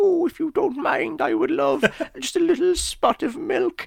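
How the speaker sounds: dainty, polite, sweet, pitched way up. Acting out a polite character asking for milk: Sterling Holloway impression. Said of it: "That is a good impression".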